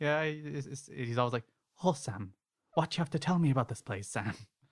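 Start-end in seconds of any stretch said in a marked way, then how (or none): 1.8-4.3 put-on Irish-sounding accent. Retelling how a man addressed his spirit guide, in an attempted Sam voice. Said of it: "That sounded more like Darby O'Gillen".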